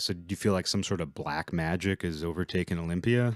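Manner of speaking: ordinary delivery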